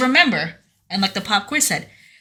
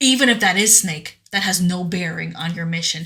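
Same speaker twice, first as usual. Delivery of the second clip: toneless, flat, emotionless, no feeling; 3 semitones lower than usual. Continuing to quote the Colonel's answer about Snake: imitating Colonel, emotionless voice. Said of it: "there's no emotion behind his voice".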